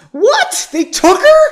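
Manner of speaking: very high, very loud squeaky half-falsetto. Reading a story aloud, a character's line in half-falsetto squeak. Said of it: "I think it was just kind of half falsetto".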